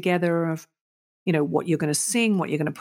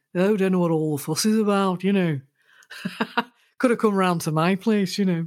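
put-on drawling Liverpool Scouse accent. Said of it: "in that Liverpudlian drawl".

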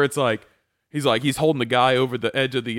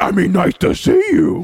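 high, loud, growly mock monster voice. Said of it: "He sounds like Cookie Monster".

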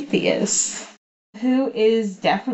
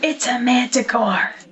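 theatrical stage whisper; 4 semitones higher than usual. During a tabletop game, a player calls out in a stage whisper. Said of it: "Stage whisper".

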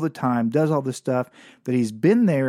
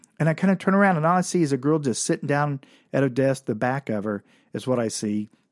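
ordinary delivery

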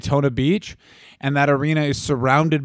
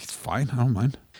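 put-on pouting, sulky, resentful, passive-aggressive tone; 3 semitones lower, 7 dB quieter than usual. Imitating a husband who sulks when his wife leaves. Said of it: "Dylan really sulks".

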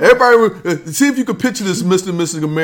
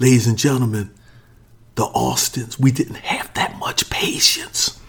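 whispered, breathy aside; 8 semitones lower, 4 dB quieter than usual. Whispering a line to make his nephew laugh, whispered. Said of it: "I'm going to whisper this".

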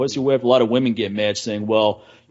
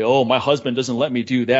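imitated proud, boastful tone. Imitating women who boast that their husband forbids things: imitating a proud wife. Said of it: "when women say proudly".

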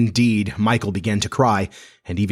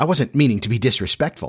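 plain

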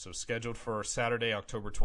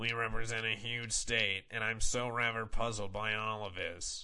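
mocking caricature of a woman's voice. Quoting a woman's reply about her attendance, in a mocking imitation of her voice. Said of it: "I don't know why I'm giving her the voice".

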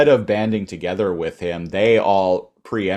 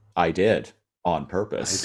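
put-on deadpan voice, quieter; 4 dB quieter than usual. Quoting a TV character showing off a fridge: Jin Yang deadpan delivery. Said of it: "His deadpan delivery".

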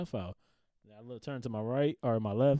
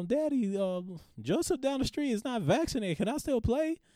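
very high, put-on, small-sounding voice; 11 semitones higher than usual.

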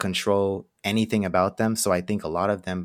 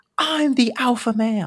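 very high shriek, stretched out slowly; 4 dB louder than usual. Retelling a clip of a schoolkid screaming at his teacher, imitating the kid screaming. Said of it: "he was screaming at the teacher".

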